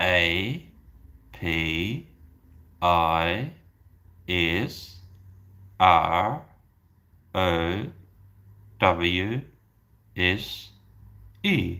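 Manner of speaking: very slow, halting, low spelling, each letter separate.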